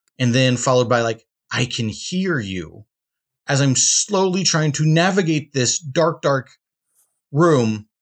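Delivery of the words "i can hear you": low, slow, eerie creepy ghost voice. Retelling a game's ghost calling out in a dark room, creepy ghost voice. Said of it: "some creepy voice going".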